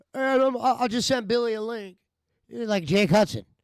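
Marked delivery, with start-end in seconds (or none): 0.1-1.9 acted drunk voice, pitched higher. Retelling what Schmidt said while drunk: imitating drunk Schmidt. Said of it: "in one of his drunken fucking".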